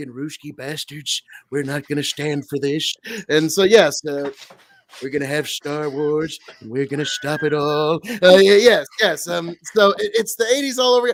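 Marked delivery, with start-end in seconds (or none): 0.1-8.0 put-on old politician voice, lower pitch. Doing an impression that another speaker praises: Ronald Reagan impression. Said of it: "I know that that was on point".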